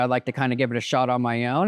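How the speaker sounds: ordinary delivery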